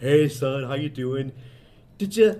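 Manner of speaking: glum, downcast, depressed, flat voice. Retelling a Brain Candy scene where a man comes home to his son, mock-depressed Kevin McDonald impression. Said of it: "where Kevin McDonald's like all depressed".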